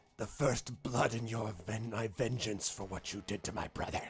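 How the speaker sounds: snarled delivery. A game master voices a character who just slashed the player: snarling. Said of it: "he snarls at you and says".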